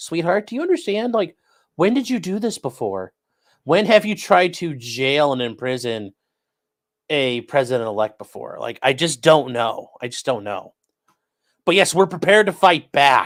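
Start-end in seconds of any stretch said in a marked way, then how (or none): none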